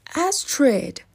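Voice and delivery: sudden exclamation. The prince, just woken by Astrid, greets her; exclaiming. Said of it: "The prince exclaimed".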